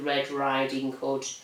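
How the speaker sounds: ordinary delivery, nothing marked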